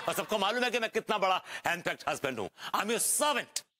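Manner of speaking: sarcastic ranting.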